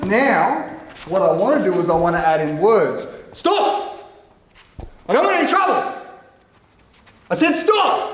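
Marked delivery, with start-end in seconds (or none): 3.3-8.1 strong, forceful, very high-pitched voice. Self-defense demo, adding words while controlling distance: loud, forceful voice. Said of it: "I'm using a strong voice".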